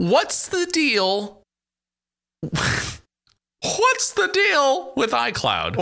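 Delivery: very high, squeaky, swooping, slow cartoon mouse voice. Doing a routine about iCloud for the others, bad Seinfeld impression, like Mickey Mouse. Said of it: "You sounded like Mickey Mouse doing a Seinfeld routine".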